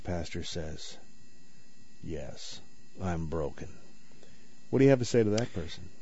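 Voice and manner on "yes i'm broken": soft, hushed, low and quiet. Speaking to a pastor, voicing an anonymous person's reply in a quiet voice. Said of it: "in a quiet voice".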